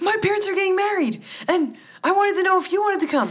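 very high-pitched, loud yelling. Retelling a phone call where a woman screamed into the phone, retelling a yell. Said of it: "She's yelling and she asks".

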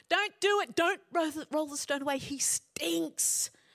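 high pleading voice. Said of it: "his sisters said".

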